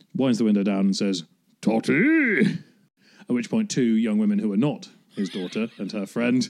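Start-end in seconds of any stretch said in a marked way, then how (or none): 1.6-2.4 shrill, loud, high-pitched raised shout. Retelling a father calling from his car window, imitating a friend's father calling out. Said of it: "I will do her impression of her own father".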